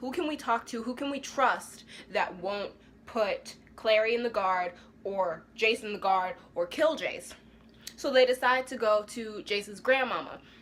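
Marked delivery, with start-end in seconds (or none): none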